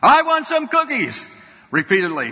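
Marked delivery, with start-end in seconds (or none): 0.0-1.2 very high, top-of-the-lungs screaming tantrum. Telling a story about a son who climbed out of his cart, retelling a screaming tantrum. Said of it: "yelling and screaming at the top of his lungs".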